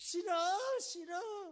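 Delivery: put-on high, loud, startled child's cry. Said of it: "그럼 애들이 깜짝 놀라서".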